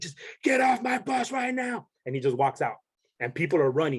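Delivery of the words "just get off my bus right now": very high, shrill drill instructor scream. Retelling the drill instructor ordering everyone off the bus: imitating a screaming drill instructor. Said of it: "starts screaming".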